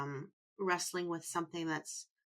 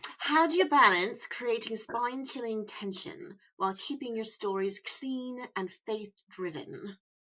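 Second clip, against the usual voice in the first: English-accented reading; 4 semitones higher, 4 dB louder than usual. Told an English accent would be perfect, the speaker reads out a question: English accent. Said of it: "If you had an English accent".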